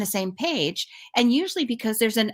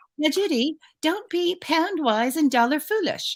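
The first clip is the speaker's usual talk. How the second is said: put-on English accent, pitched up; 6 semitones higher than usual. Quoting an assistant from England, English accent impression. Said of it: "My best impersonation of her".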